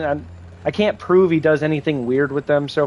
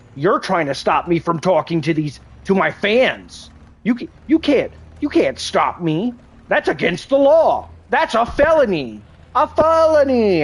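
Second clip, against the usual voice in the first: high, swooping, sing-song, animated up-and-down delivery; 5 semitones higher than usual. Retelling what Cyrax says to kids who stop him: imitating Cyrax. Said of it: "Cyrax will literally talk to kids and be like".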